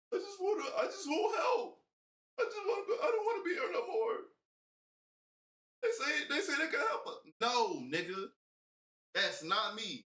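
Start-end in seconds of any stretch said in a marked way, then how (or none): 0.1-7.1 tearful, very high sobbing voice. Imitating how she would sit around asking for help: mock crying. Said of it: "You probably be sitting around crying".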